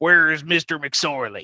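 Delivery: put-on loud, drawn-out old western movie cowboy drawl. Acting out someone walking into a bar in an old Western: Western movie accent. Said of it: "When you say it with the accent".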